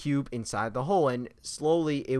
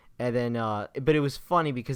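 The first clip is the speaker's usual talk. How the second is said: ordinary talk, nothing marked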